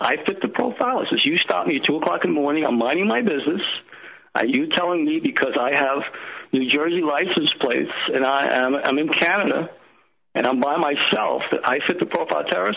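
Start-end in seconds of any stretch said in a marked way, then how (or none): none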